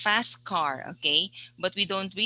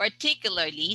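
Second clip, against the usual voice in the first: particularly with stress on second syllable -tic-. A teacher models a word's pronunciation for a student, stress on 'tic' in particularly. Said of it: "the stress is on the second syllable".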